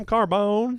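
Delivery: mimicked southern pronunciation. Repeating the other speaker's answer back: imitating a Southern-accented Carbone. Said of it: "I love how Southern you said Carbone".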